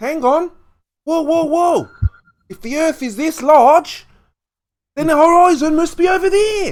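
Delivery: very high, very loud, shrill bad Australian accent. Speaker acts out a quote while a listener questions the attempt; bad Australian accent. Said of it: "is that really your best Australian accent".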